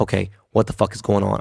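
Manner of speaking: ordinary talk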